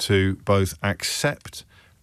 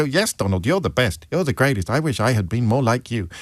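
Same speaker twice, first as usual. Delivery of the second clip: put-on puppet voice. Imitating a toilet-paper effigy president answering donald: put-on puppet president voice. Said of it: "done his own voice for the, for the, for the effigy president".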